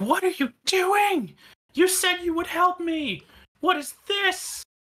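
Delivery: very high, piercing shrieking creature voice. Voicing a creature in the air inlet as gasoline is poured in, shrieking creature voice. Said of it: "you hear a shriek come out from there".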